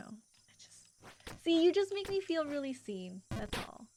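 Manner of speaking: heartfelt words through a laugh, holding back tears. Speaker opens up emotionally to the listener, laughing to keep from crying. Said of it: "I'm like laughing because I don't want to cry".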